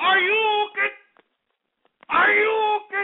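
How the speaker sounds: shouted with audible concern.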